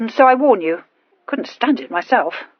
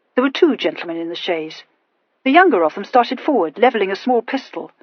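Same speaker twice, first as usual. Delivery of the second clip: plain reading voice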